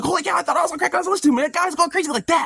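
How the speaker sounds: put-on fast rambling talk. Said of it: "it got me talking fast, going all over the place".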